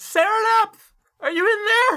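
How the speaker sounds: panicked yelling. Voicing a panicked boy calling through a door: panicked yelling. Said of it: "that sounds like panic".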